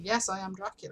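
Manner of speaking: matter-of-fact, transactional delivery. Comparing two actors' deliveries, quoting the line in Lee's businesslike Dracula delivery. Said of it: "he confirms it as though it's a business transaction".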